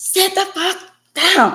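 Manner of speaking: play-acted, very high-pitched, furious angry shout. Wheelchair user recounting what they say when very angry, acting out an angry outburst. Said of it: "when I get very, very angry".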